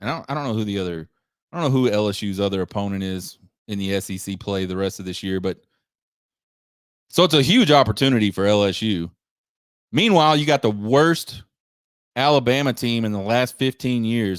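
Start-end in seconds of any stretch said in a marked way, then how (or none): 10.4-14.4 heavily sarcastic, condescending, talking-down tone. Quoting a claim seen all over the internet: very condescending and sarcastic. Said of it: "very condescending and very sarcastic".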